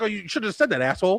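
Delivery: snarky, sarcastic comeback tone. Retelling how it answered after the speaker corrected it, imitating a sarcastic reply. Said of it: "it kind of said it in a way".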